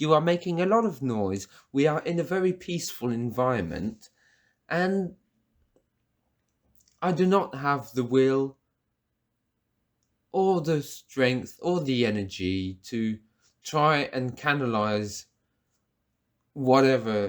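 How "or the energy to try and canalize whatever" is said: ordinary talk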